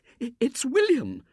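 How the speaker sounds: in hysterics, pitched very high. A woman reacts to the son's wholly unexpected appearance, hysterical. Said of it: "she said hysterically".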